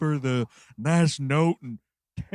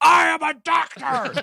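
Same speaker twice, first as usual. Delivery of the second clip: put-on scream, higher and louder; 12 semitones higher, 7 dB louder than usual. Retelling a movie character's freak out in the streets: imitating a character screaming.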